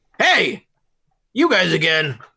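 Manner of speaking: put-on goblin voice, slow and drawn-out. Voicing goblins who recognize the party: goblin voice. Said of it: "I don't remember what goblins sounded".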